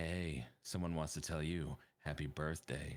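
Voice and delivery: low husky tone. Retelling someone's birthday message at the docks, in a real husky voice. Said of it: "gave him a real husky voice".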